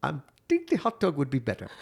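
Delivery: gentle, persuasive, soft, swooping food-vendor voice. Retelling an exchange while ordering food, imitating the hot dog vendor. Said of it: "I'm impersonating".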